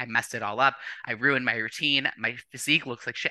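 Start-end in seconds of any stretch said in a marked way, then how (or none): none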